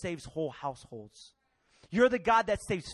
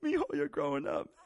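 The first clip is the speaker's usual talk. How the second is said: mock teary, tearful crying voice; 4 semitones lower than usual. Retelling what Dad said before college, imitating dad crying. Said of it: "he started crying one night".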